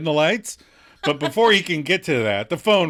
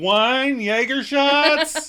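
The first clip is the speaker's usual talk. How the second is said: put-on loud voice, higher; 11 semitones higher, 3 dB louder than usual. Retelling a TV scene, acting out Mark's question: loud Mark voice. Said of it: "he loudly asks".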